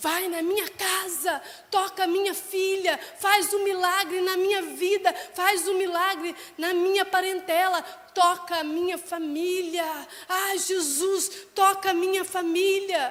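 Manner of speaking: bold, loud, high-pitched shouting. Retelling a father's plea to Jesus for his daughter: imitating Jairo shouting. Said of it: "Jairo tá gritando".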